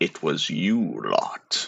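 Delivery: soft, rough, gritty, gravelly creature voice. Game master voicing the thing scanning the ship as it spots the crew: gravelly voice. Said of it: "with a sort of gravelly voice, it says".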